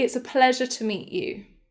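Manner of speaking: usual speaking voice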